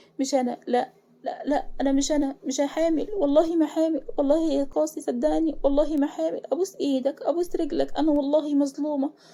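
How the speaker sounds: terrified, fearful, sobbing, hysterical crying. Reading a story where an accused woman pleads her innocence: fearful hysterical crying. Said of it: "ملاك بخوف وعياط هستيري".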